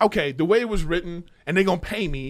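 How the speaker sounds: usual speaking voice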